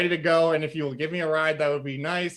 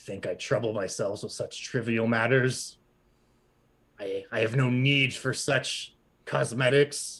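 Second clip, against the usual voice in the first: grave, serious, low voice of a skeletal horse; 4 semitones lower than usual. Voicing a skeletal horse who turns down offered stickers: serious skeletal horse voice. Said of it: "He looks at you and says".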